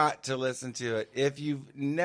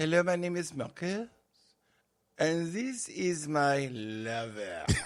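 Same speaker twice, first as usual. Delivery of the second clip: attempted, put-on French accent; 3 semitones higher than usual. Introducing a lover just for fun, in an attempted French accent. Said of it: "I dare not do a French accent because I can't. I'll try".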